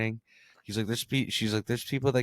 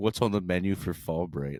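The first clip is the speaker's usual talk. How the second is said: put-on cringey bro voice, lower; 3 semitones lower than usual. Retelling how the chatbot greets the speaker: ChatGPT talking like a cringe friend. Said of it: "the way it talks is like your cringe friend".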